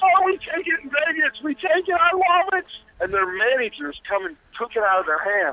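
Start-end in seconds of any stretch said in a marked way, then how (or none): 0.0-2.7 very high, loud, stretched-out, drawn-out screaming words. Retelling two people screaming together in a photo line; imitating screaming. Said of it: "We're both sort of screaming".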